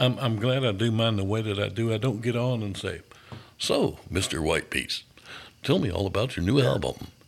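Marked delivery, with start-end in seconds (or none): 3.6-7.0 mock radio-host announcer voice. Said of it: "that radio voice stuff".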